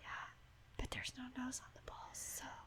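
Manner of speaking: whispering softly. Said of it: "I think you're just whispering".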